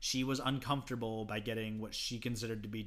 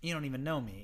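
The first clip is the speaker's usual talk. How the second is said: usual speaking voice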